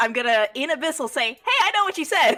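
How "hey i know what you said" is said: bright, friendly, cheerful tone, very high chirping pitch. A small character speaking to a giant creature while punching it, in a cheerful voice. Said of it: "a cheerful voice towards it".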